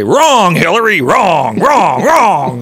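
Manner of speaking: loud, host-style proclaiming delivery. Speaker imagines the late host's verdict, John McLaughlin impression. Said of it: "if John McLaughlin, the deceased McLaughlin, was hosting, he'd say".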